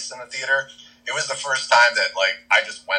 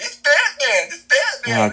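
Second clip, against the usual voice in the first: mock very high, excited, drawn-out child's scream; 4 dB louder than usual. Retelling how a kid behind them interrupted a movie scene, imitating a kid screaming. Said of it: "this little snot-nosed kid behind me just starts screaming".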